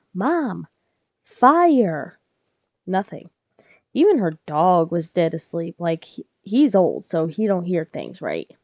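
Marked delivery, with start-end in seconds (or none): 0.2-2.2 loud calling-out yell, long and drawn out. Retelling calling to the living room: imitating a yell. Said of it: "I yelled".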